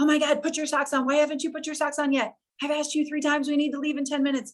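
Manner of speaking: put-on high-pitched yelling. Retelling a morning in the kitchen, telling her son to put socks on: imitating herself yelling. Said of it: "yelling at my son".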